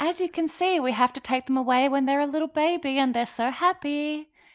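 small, creepy, high voice. Imitating Carol from a video about taking away baby animals: Carol's creepy little voice. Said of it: "In her, like, little voice that is, like, really creepy".

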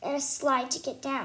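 ordinary delivery

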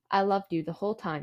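ordinary talk, nothing marked

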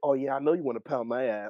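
ordinary talk

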